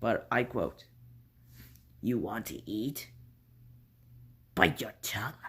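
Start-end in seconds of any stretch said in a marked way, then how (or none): 2.0-5.3 breathy, eerie, weird demonic whisper. Quoting the voices in a woman's head from a story; weird demonic voice. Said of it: "I'm gonna do a weird demonic voice".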